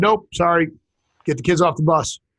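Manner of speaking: ordinary talk, nothing marked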